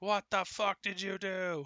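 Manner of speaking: heated, angry, accusing tone. In a roleplaying game, a character yells at two companions. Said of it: "And I'm yelling at Bjorndrik and Sokar".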